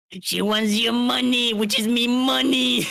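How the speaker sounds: put-on gruff cartoon crab. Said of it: "Why does that sound like Mister Crab?".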